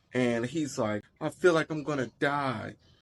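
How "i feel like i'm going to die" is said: put-on crying child voice, higher. Retelling what the child says: imitating a crying child.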